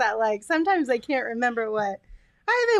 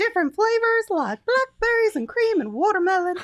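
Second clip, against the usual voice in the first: put-on high, heavily Southern-accented ad-read voice. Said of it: "Now you sound like you're Southern".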